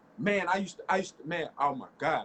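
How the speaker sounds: excited, worked-up, stuttering and tripping over words. Talking with a friend, getting excited mid-story; excited stuttering. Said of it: "Excuse me for the stuttering, but I'm getting excited".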